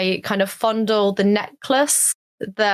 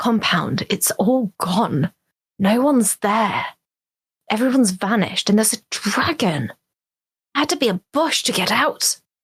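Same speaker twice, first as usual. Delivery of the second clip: dropped-down, low, secretive voice. Retelling leaning in to tell everyone about the compound, in a low voice. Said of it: "kind of low voice".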